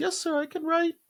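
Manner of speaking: put-on very high, unbroken, pre-puberty boy's voice. Recalling answering a man in a hallway as a kid: pre-puberty boy voice. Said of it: "I said in this pre-puberty voice".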